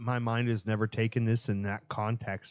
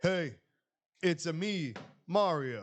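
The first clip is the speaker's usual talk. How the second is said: high-pitched, very slow, drawn-out voice; 7 semitones higher than usual. Picturing Nicolas Cage playing Mario, doing his Mario line: Nicolas Cage as Mario voice. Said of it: "Nick Cage as Mario".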